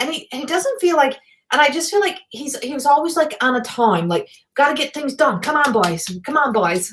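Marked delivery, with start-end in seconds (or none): 5.4-6.9 put-on Newfoundland accent, heavily exaggerated. Quoting the busy fish plant owner, Newfoundland accent. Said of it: "I just pulled that Newfie accent out".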